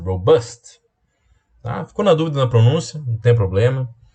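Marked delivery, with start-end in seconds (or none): 0.0-0.8 robust with stress on the bust syllable. Giving an English pronunciation tip in Portuguese, stress on bust in robust. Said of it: "o acento é no bust".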